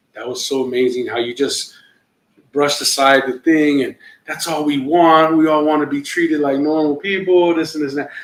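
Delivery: acted-out weepy, tearful, crying voice. Retelling what a crying comic said after a show: imitating someone crying. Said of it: "he came over and he's crying".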